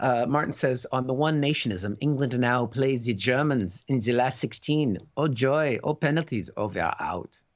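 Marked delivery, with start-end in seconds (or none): 2.0-7.4 put-on German accent. Reading out a message from a listener, put-on German accent. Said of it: "I figured that needed to be read in a German accent".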